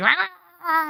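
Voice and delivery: very high, drawn-out, angry screaming roar, acted out. Retelling how she came at the speaker screaming; a mock-angry roar. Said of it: "coming at me all like".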